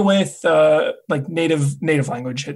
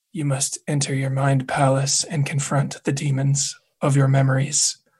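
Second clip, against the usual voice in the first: put-on whisper, lower pitch; 3 semitones lower than usual. Joking about how a line would be delivered, as a whispering Hannibal impression. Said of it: "be like whispering Hannibal".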